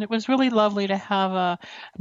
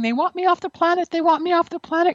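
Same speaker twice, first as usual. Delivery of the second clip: high, repeated screaming of the words; 9 semitones higher, 3 dB louder than usual. Retelling being pulled from a wrecked car by paramedics: imitating own screaming. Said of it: "I was screaming".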